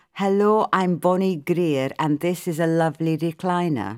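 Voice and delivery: ordinary talk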